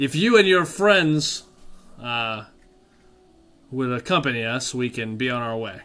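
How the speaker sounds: calling out in an announcing tone. Voicing an NPC projecting so everyone within earshot hears: loud projecting voice. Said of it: "he says this really loud".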